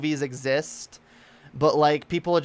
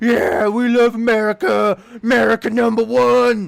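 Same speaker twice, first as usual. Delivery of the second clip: mock scream, much louder and higher; 8 semitones higher, 9 dB louder than usual. Retelling hearing people setting off fireworks, imitating the adults screaming.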